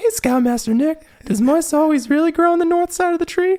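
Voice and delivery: bright, teasing, very high, cheery mocking sing-song. Recounting how someone mocked him with a put-on voice: cheery mocking voice. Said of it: "he'd do a voice like".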